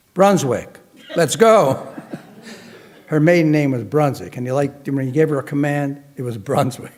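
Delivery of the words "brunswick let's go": announcer voice call. Retell how Norman signalled that the party should break up, in Norman's famous announcer's voice. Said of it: "in his famous announcer's voice".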